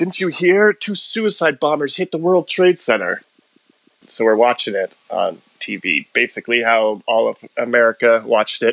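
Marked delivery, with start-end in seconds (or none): 0.0-3.2 very high-pitched scream. Retelling what the boss said on arrival at the office: imitating someone screaming. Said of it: "He's screaming".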